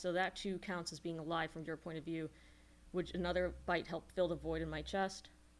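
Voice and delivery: ordinary talk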